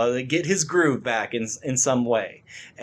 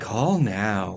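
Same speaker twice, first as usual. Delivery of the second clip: low commercial voiceover announcer tone; 4 semitones lower than usual. Describing a scene with a phone ad, the speaker does the ad voiceover voice. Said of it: "you just hear the voiceover like".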